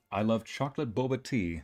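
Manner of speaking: ordinary talk, nothing marked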